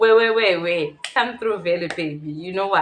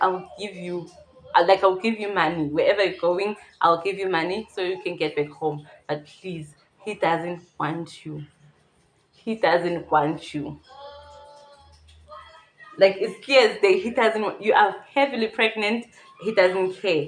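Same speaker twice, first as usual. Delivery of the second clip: ordinary delivery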